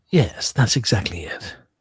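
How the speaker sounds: slow, whispered, conspiratorial tone.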